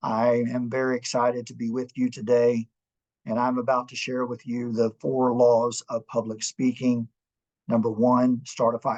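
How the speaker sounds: dull, flat, level one-note presenter-style monotone. Showing how a monotone presentation opening sounds, in a flat monotone. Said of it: "if I was speaking in a monotone fashion, something like this".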